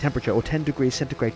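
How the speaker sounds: fast, rapid-fire reading rattled off in one breath.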